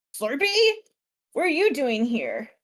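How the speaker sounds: animated goblin voice with swooping pitch. Voicing a goblin who gets up from eating and greets Slurpee: goblin voice. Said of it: "a goblin gets up from eating, and he's like".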